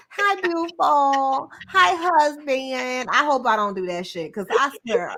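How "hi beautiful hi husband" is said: very slow, drawn-out, put-on baby talk. Picturing herself talking to her husband: put-on baby talk. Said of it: "I talk the baby talk".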